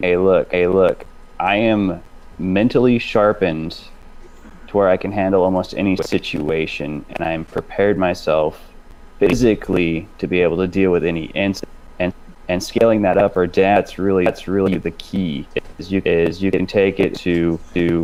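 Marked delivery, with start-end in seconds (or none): none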